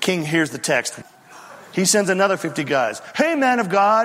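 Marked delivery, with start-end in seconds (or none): 3.1-4.0 mock jeering, scornful taunting at a higher pitch. Retelling a Bible story, the speaker acts out the king's men: retelling a mocking taunt. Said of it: "they say it in a kind of a mocking fashion".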